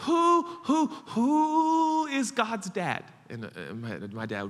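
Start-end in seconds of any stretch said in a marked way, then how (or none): 0.0-3.0 very slow, very loud, very high, drawn-out stutter on who. Retelling a childhood bedtime question to dad: imitating own childhood stutter. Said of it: "I stuttered".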